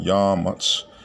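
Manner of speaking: first syllable "YA" in "Ya Matz" heavily stressed.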